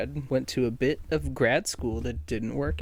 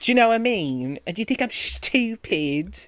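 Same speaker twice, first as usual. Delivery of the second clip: put-on Essex accent, raised and high-pitched; 9 semitones higher, 6 dB louder than usual. Trying out accents, the speaker demonstrates an Essex accent. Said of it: "it's like the Essex".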